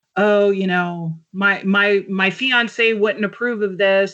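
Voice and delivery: ordinary talk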